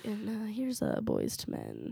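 slow, late-night slow jams radio host voice. Imitating a late-night radio host on sunday slow jams: late-night slow jams dj voice. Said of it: "it's like".

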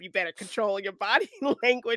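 put-on sarcastic tone. Retelling how a friend would tease the speaker about body language, mimicking the sarcasm. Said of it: "like my friend would sarcastically say to me".

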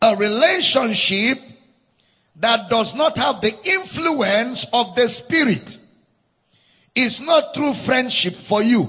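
slow, deliberate, word-by-word dictating pace. Speaking to listeners so they can write it down, saying it slowly for note-taking. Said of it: "I'm going to say it slow so you can write down".

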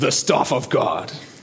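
epic, dramatic Hollywood movie trailer narration voice. Retelling Exodus, Moses heading back to Egypt: Hollywood movie trailer voice. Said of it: "Hollywood trailer voice".

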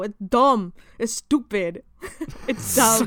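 put-on comic, funny New York Bronx accent. Mocking two talk-show hosts from the bronx, doing their funny bronx accent. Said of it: "they just have a funny Bronx accent".

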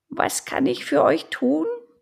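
very high, rough, rasping, croaking owl voice. Narrator reads a very old owl answering two visitors, croaking owl voice. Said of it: "fragte die Eule mit krächzender Stimme".

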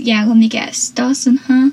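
ordinary talk

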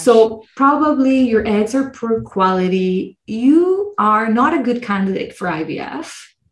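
mock, slow, patronising, condescending, talking-down voice. Retelling what the speaker was told about IVF, imitating a condescending tone. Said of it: "but it was so condescending".

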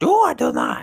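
squeaky, creaky croaking voice. Recalling watching Star Wars as a kid, a speaker does a terrible Yoda impression. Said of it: "That's a terrible Yoda impression".

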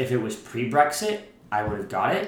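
plain

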